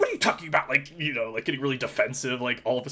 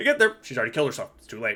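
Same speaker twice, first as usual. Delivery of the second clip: breezy, casual, matter-of-fact offhand delivery. Retelling a film character's line about a suicide: imitating a casual delivery. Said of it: "he says it like this".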